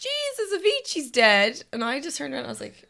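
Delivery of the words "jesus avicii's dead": very high, swooping shout. Retelling what a girl in a long bathroom queue did: imitating someone shouting. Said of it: "this girl just shouted".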